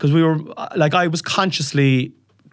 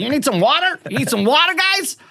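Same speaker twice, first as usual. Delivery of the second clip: put-on American accent, pitched much higher; 11 semitones higher than usual. Parent retells son Harvey handing out water to everyone, Harvey's American accent. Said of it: "coming along with his American accent".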